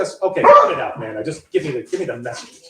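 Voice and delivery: very loud, rude, impatient delivery with swooping pitch. Retelling how one caller answered the phone: imitating a rude celebrity. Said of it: "one of them on there was just extremely rude".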